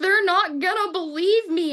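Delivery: tearful crying speech. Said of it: "crying in the front seat".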